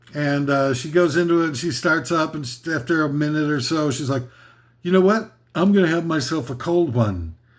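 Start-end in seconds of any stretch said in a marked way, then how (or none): 4.8-7.3 phony, put-on casual, sing-song disingenuous tone. Retelling a woman's livestream from her kitchen, mock disingenuous voice. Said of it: "in the most disingenuous sounding voice of all time".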